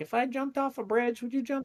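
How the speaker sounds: put-on Southern accent. Imitating the speaker's mom: southern accent. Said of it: "I don't know why I gave her a Southern accent".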